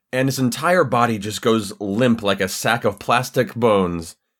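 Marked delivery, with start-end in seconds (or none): none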